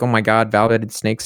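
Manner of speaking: usual speaking voice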